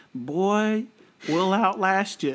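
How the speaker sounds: put-on slow, smug, condescending Southern accent. Imitating the villain talking down to others: imitating a smug Southern plantation owner. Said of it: "almost a little bit like Southern slave owner".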